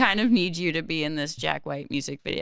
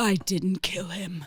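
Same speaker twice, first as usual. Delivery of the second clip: put-on lowered, low-pitched voice. Retelling a line said on camera for an interrogation scene: putting on a lowered voice. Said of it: "lower my voice as much as possible".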